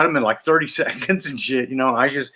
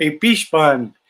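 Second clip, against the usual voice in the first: put-on thick Filipino accent; 2 semitones higher than usual. Retelling a visit to her uncle's house, quoting the wife: imitating wife's thick Filipino accent. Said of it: "my wife had this really thick accent".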